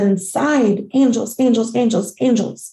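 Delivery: normal talking voice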